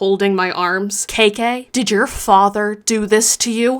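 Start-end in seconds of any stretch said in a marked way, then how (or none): 1.1-3.8 put-on severe, grave, very stern voice. Retelling how a woman holding her arms questioned her, in a mock-stern voice. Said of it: "asks me in a very stern voice".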